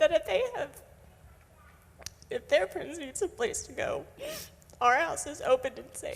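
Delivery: crying while talking. A speaker sharing with the group, unexpectedly crying while talking. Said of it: "I don't know why I'm crying".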